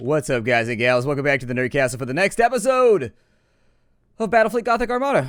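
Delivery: running out of breath. Welcoming viewers back to a new episode, running out of breath. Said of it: "I ran out of breath".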